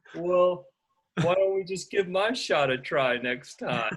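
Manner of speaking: sulky, pouting sad tone. Retelling what a man said after being shown a technique, mimicking a pouty, sad voice. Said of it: "in this like pouty, sad voice".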